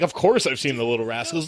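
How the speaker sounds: mock snide, snippy, dismissive brushing-off tone. Mocking another speaker's answer about an old show: imitating a dismissive tone. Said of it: "don't come at me with that tone like".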